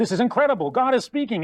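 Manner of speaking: put-on thrilled, gushing, high-pitched excitement. Acting out angels who interrupt god in a parable: excited angels. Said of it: "And they get all excited".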